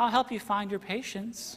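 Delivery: put-on sweet, helpful little six-year-old child's voice. Retelling a child's reply to someone who lost patience: sweet little six-year-old voice. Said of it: "with a sweet little six-year-old voice".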